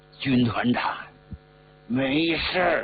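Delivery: words forced through gritted, clenched teeth. Narrator reads wounded He Bingyan answering his commander; through gritted teeth. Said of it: "咬着牙说".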